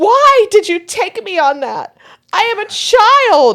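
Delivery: acted very high, tearful, drawn-out crying child's whine. Retelling a little girl's meltdown after a ride, imitating a crying child. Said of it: "she's crying".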